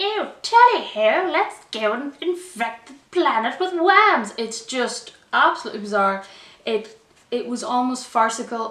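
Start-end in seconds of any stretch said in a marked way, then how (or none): 0.0-4.3 put-on loud, swooping, hammy British accent, laid on thick. Mimicking the alien-possessed character, in an over-the-top British accent. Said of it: "the most over the top British accent I've ever heard".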